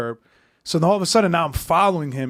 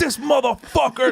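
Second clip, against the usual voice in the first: high, angry, furious outburst; 7 semitones higher than usual. Recounting seeing the cop while driving back, retelling an angry outburst. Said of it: "I was so fucking angry".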